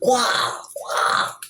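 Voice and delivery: ill-sounding dinosaur voice. Showing off your secret sauce, saying it in a dinosaur-with-strep-throat voice. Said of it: "Dinosaur with strep throat".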